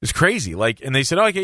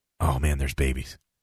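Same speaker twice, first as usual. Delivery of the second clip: mock deadpan serious, much lower and quieter; 12 semitones lower, 5 dB quieter than usual. Retelling what a man said during an ear check, imitating deadpan seriousness. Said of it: "he was deadpan serious".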